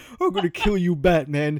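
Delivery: threatening villain voice. Speaker complaining about a video game villain: Arkham Knight voice. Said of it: "all we hear is Arkham Knight voice".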